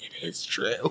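barely audible, hushed, breathy whisper. Retelling how a woman in a movie turns and whispers: imitating a whisper. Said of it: "turns and whispers".

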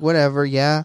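put-on indifferent character voice. Retelling a scene, imitating Eren not caring: imitating Eren, indifferent. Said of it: "He's like".

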